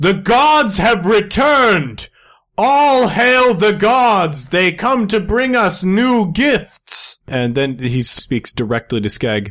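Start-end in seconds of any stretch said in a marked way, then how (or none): 0.0-7.2 very high, grand herald-style announcer voice. A character comes up to the party and announces them, announcing to the party. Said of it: "they just sort of announce".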